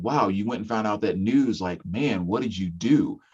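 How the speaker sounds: usual speaking voice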